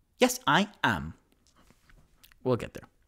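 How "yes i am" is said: very enunciated female voice, each word articulated. Quoting Paige's reply, speaker repeats it in a Paige voice, very enunciated. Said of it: "Very enunciated and female".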